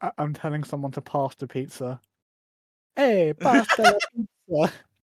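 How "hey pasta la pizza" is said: exaggerated, over-the-top, sing-song Italian accent. Speaker acts out telling someone to pass the pizza, in an Italian accent. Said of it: "It sounds like an Italian".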